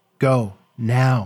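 pleading, begging, imploring. A woman urging a visitor to leave, pleading. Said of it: "she pleaded".

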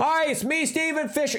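very high yelling pitchman voice over roaring noise. Acting out a made-up commercial character with chainsaw hands: yelling as a chainsaw-handed pitchman. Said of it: "You have to yell because you're talking over your chainsaw hands".

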